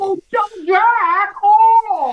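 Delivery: very high, very loud, slow, whistly, drawn-out oh. Joking about Adam Sandler quotes from Jack and Jill: Adam Sandler's Jill voice. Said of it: "I just know he talks like that the whole".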